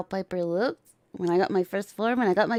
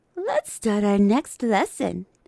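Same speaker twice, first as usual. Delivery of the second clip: sing-song, swooping teacher voice. Showing the voices they can do: Misaki Sensei voice. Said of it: "Misaki Sensei voice".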